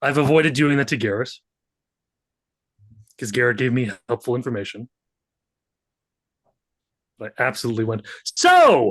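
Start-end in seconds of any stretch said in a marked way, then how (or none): 8.2-8.9 very loud, high, bellowed "so". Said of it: "very loudly a few times".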